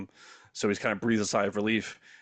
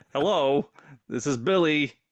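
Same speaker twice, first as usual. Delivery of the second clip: loud, high, robotic speech-device voice; 5 semitones higher, 5 dB louder than usual. Demonstrating her phrase-selecting speech device answering the phone, in a robot voice. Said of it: "It's a robot voice".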